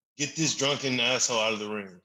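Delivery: ordinary talk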